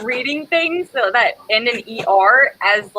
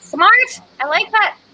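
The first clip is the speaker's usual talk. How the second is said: Irish accent, pitched very high; 10 semitones higher than usual. Agreeing with a plan for a meetup, Irish accent. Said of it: "I don't know why I went Irish there".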